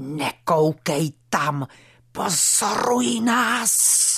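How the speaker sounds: hissed, sharp. A man thought to be mute speaks for the first time: hissed. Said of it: "zasyčel".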